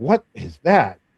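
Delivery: loud, all-excited, eager voice. Speaker retells a young patron's reaction to the old fire engine, acting out excitement. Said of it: "he was all excited".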